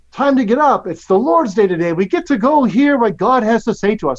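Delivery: eager, excited, acted out. A parent retells waking the kids on sunday mornings, acting out an excited voice. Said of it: "There's excitement in my voice".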